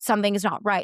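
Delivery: mock panic, alarm rising in the voice. Retelling a labor story, recalling her own words: imitating her own panic. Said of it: "And I was panicking".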